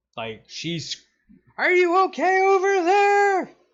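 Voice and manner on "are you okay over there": very high, loud, top-of-the-lungs shout. Voicing a character calling over noise to the next canoe: yelling at the top of her voice. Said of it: "she has to yell at the top of her voice to be heard".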